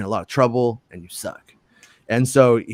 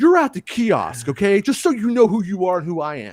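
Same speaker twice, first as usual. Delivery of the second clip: mock bossy commanding voice, higher; 8 semitones higher than usual. Retelling what the store's assistant manager said: mocking imitation of a general-like boss. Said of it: "a real general".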